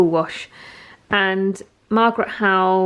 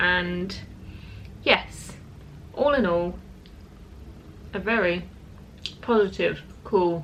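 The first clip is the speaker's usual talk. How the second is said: talking with food in mouth, quieter; 9 dB quieter than usual. Summing up a catch-up with someone, talking while eating. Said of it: "I don't know why I'm eating and talking at the same time".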